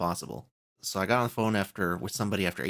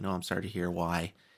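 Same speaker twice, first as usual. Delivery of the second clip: mock-sympathetic, pouty voice; 2 semitones lower, 3 dB quieter than usual. Retelling a call to cancel a service, quoting the loyalty agent: mimicking a sympathetic, pouty voice. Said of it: "she was so like sympathetic and like pouty".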